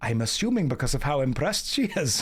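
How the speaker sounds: Welsh accent gradually sliding into a Scottish accent. An English speaker narrates a scene in character: Welsh accent drifting Scottish. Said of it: "That went Scottish at the end there".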